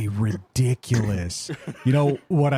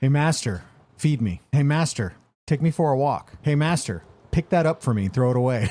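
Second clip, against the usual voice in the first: put-on bossy, demanding dog voice, higher. Describing how a dog treats its owner, imitating a demanding dog. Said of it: "It's like".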